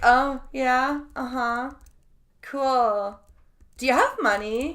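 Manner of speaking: slow, bored, uninterested, dismissive tone. Mocking a woman on screen replying to a writer: imitating someone uninterested. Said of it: "she's like".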